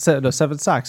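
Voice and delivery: ordinary talk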